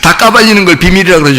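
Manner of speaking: laughing through the line with wide pitch.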